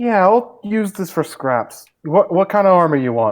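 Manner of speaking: dainty, delicate, light, high female voice. Voicing a woman character as she speaks to the group; delicate, light female voice. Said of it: "in her delicate and light voice".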